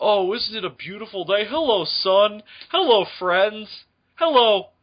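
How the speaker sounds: high-pitched children's TV cartoon bear character voice. Acting out the bear waking up in a made-up crossover: Bear in the Big Blue House voice. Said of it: "The bear fucking wakes up. He's like".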